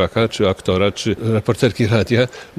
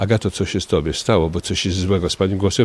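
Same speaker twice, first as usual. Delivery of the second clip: plain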